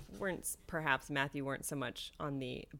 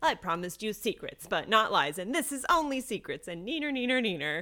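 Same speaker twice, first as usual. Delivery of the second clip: mock super condescending, raised, high teasing taunt; 6 semitones higher, 9 dB louder than usual. Speaker paraphrases a character from the book: mock-condescending taunt. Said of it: "he does it like super condescendingly too".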